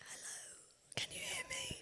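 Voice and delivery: soft, croaky, voiceless whisper. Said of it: "I'll be like".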